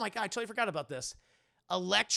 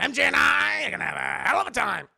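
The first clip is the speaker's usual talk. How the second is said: put-on cackling villain voice, higher and louder; 5 semitones higher, 8 dB louder than usual. Comparing two Green Goblin actors, doing the Willem Dafoe Green Goblin voice. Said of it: "he doesn't have the Willem Dafoe, like, laugh".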